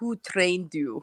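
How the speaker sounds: put-on thick Russian accent laid on heavily. Retell his reply after you told him your experience, in Samir Osmanagic's thick Russian accent. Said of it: "In his, like, thick, m like, Russian accent".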